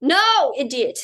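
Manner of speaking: shouting. Explaining chemistry alone in their room, the speaker corrects a slip, shouting. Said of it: "I'm shouting now in my room".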